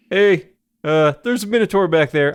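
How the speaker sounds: sudden put-on Canadian accent. A player voices a character meeting the party, in a sudden canadian accent. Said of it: "Sorry, Canadian all of a sudden".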